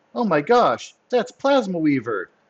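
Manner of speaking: high, loud, swooping crying out. A game narrator voicing a lady's line, crying out. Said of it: "The lady cries out".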